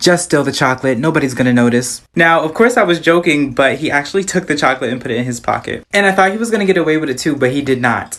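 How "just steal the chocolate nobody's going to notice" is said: whispering at a lower pitch. Speaker retells leaning down to a little boy, retelling a whisper. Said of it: "I lean down and I whisper to him".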